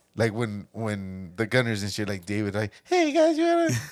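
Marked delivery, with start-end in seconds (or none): 2.8-3.7 very high, loud, silly, stupid mocking voice. Imitating the stupid voice the other speaker does on their podcast: imitating a stupid voice. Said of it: "that stupid fucking voice".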